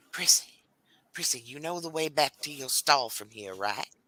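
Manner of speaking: hushed whisper. A character steps outside and whispers to prissy; whispering. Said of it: "she is going to whisper to Prissy".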